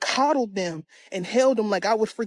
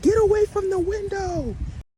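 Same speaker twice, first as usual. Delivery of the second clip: put-on very high-pitched, shrill yell; 11 semitones higher than usual. Retelling a dream, warning someone by the window: retelling a yell. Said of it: "I yelled to the person".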